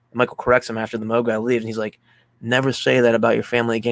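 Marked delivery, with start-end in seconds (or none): none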